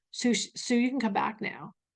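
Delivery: quiet hushed stage whisper, a soft sh. Retelling how her husband wakes her at the dentist: imitating a half-whisper. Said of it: "he will literally whisper".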